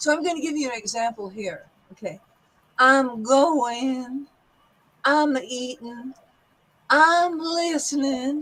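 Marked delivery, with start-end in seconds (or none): 2.8-8.4 very slow drawl, stretched vowels, dropped g's. Teaching accents, giving an example with long vowels and dropped G's. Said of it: "long vowels and the dropping of the G's".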